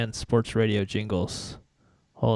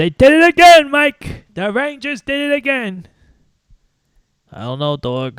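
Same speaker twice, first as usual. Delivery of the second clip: very high, loud, booming radio-host voice, belted out; 12 dB louder than usual. Doing a Mad Dog impression for the others: Chris Russo voice. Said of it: "that's my Mad Dog impression".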